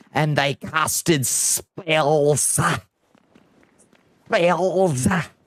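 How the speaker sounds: outrageous, over-the-top put-on Scottish accent. Retelling a game's intro cinematic narrator: imitating an outrageous scottish accent. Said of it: "the most outrageous Scottish accent I have ever heard".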